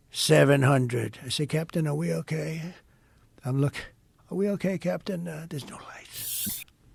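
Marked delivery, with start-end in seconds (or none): 0.1-1.1 robotic, automated computer voice, louder. Retelling a plane's descent, calling out altitude in a robotic computer voice. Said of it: "It's a computer voice".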